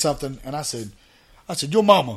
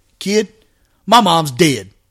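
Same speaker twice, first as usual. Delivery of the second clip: put-on dead-serious tone, louder and slower; 2 semitones higher, 9 dB louder than usual. Retelling the answer he gave a kid who insulted his mom: retelling a dead-serious reply. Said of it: "with the most serious face I could give".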